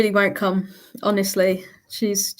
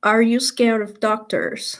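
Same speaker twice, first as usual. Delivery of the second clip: fake but passable, put-on American accent; 2 semitones higher than usual. Reading a question out to show a put-on american accent. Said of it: "I'll read out in an American accent".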